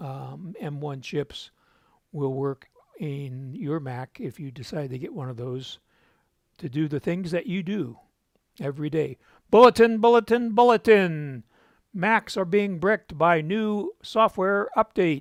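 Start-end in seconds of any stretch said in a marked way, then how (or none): 9.5-15.2 very loud, high-pitched shouted yell. Speaker announcing a news bulletin about Macs, yelling. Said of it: "Sorry if I was yelling there".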